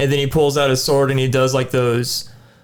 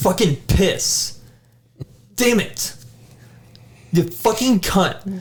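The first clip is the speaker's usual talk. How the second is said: mock angry cursing, higher pitch; 6 semitones higher than usual. Showing how they sound when losing to a boss: acting out rage at losing. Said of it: "what do you sound like when you lose to this boss every time".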